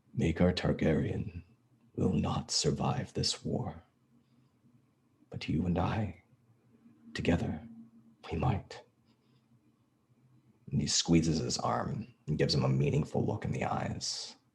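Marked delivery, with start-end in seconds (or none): 0.2-8.8 hushed, close, conspiratorial half-whisper. Speaking in character to a kneeling prisoner, hand on his shoulder: half-whispering. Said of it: "just sort of whispers to Ellery".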